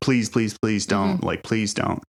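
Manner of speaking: frantic, desperate, repeated pleading tone. Retelling how she begged for her life: imitating begging for her life. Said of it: "begs for her life and just says".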